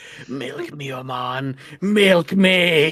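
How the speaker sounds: drawn-out, very slow telepathic voice, every word dragged. Voicing a Grimlock approaching with telepathic thoughts: Grimlock telepathic voice. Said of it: "with telepathic thoughts going".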